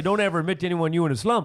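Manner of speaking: ordinary talk, nothing marked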